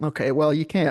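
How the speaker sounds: ordinary delivery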